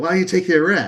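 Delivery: hollering, barking voice. Retelling the dad yelling at him: imitating Uncle Mar yelling. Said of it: "He's yelling at Q".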